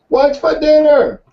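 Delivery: put-on, very high-pitched yelling from a distance. Telling a joke, the husband calls from twenty feet: imitating a man yelling. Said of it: "He yells".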